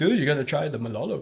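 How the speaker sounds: easygoing, laid-back snowboard dude voice. Talking snowboard gear, speaker retells a recommendation, imitating Terry. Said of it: "is that a good Terry impression?".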